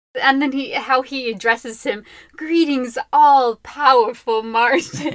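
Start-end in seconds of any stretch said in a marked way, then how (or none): 2.3-5.1 put-on sarcastic character voice, louder. Retelling how Ember addresses Martin: sarcastic Ember voice. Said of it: "he's so sarcastic".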